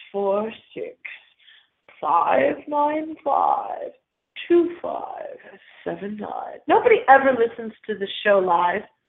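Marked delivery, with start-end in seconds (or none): 0.1-6.6 really scary, spooky voice, much quieter. A show host gives the call-in number in a really scary voice. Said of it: "in a really scary voice".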